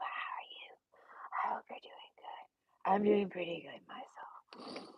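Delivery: whispered voice. Greeting viewers at the start of the video, whispering. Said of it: "We're whispering right now".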